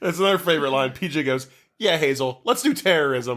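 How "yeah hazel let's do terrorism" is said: sarcastic tone, dripping with sarcasm. Recapping a movie, quoting one character's reply to another: retelling a sarcastic remark. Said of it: "like sarcastically".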